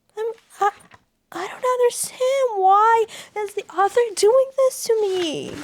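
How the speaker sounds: very high-pitched voice, near tears, half crying. A reader reacting to what the book's author is doing, half crying. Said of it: "when I'm I'm half crying".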